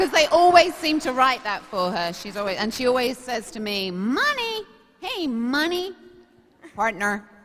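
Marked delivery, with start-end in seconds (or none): 3.9-7.2 high calling, each word stretched and swung upward. Asked for an impression, doing a Kit impression. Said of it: "we all do a bit of an impression of her".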